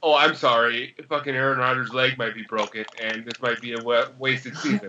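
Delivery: normal talking voice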